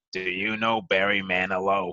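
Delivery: put-on slow, lingering older woman's voice. Retelling what a sixty-five-year-old woman on the sidewalk said: imitating an older woman's voice. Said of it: "with this voice goes".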